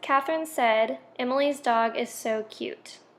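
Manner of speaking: ordinary delivery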